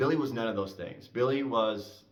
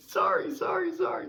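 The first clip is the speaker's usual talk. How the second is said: very high, giggly, laughing voice; 4 dB louder than usual. Retelling how Billy reacted when told to shut up mid-combat, mimicking Billy's giggling apology. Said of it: "he kind of starts giggling".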